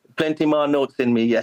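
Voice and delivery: put-on broad Jamaican accent, laid on thick. Retelling what a bass player friend used to say: put-on thick Jamaican accent. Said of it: "he had a thick Jamaican accent".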